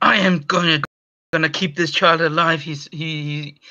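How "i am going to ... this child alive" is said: angry, tense whisper. Voicing a doctor refusing to let a girl die: angry whisper. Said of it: "he whispers angrily".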